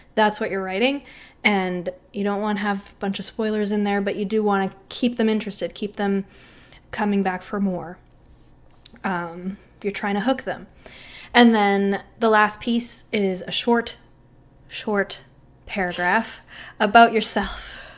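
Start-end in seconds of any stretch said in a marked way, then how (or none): 13.5-15.2 stressing the word "short". Explaining the last section of the writing, stressing the word short. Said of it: "I want to emphasize the word short again".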